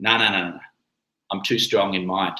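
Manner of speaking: soft, low, calm, easy, unshakable, assured tone. Showing how to answer someone pushing you to have a drink, with a little grin. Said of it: "And do it with a little grin".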